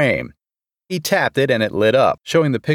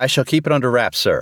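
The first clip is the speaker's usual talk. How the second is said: usual speaking voice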